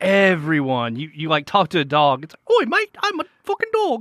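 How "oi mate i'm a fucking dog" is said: squeaky, very high-pitched put-on Cockney accent. Describing how characters in a game talk, imitating a cockney accent.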